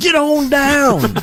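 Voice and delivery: awful, over-the-top cowboy salesman voice, very high, shrill. Retelling a car dealership commercial: imitating an over-the-top cowboy car dealer. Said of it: "cowboy, awful car dealership thing".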